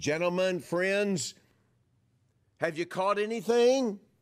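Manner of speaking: high, loud, friendly call. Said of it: "He's saying".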